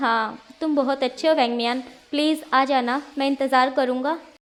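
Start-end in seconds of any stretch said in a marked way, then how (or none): none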